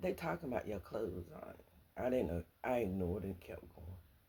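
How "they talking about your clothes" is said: quiet, hushed half-whisper. Retelling what a woman walking with them half-whispered: imitating a half-whisper. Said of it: "whispered to me".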